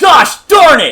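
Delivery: shrill, all-out, very loud high scream. Retelling opening card packs on camera: imitating own screaming. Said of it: "just screaming, like".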